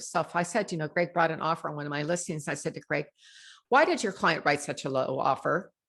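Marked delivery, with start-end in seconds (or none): 3.7-5.6 accusatory, blaming tone with a swooping pitch. Showing how a why question sounds to another agent: accusing tone. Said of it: "You can hear the accusation in my voice".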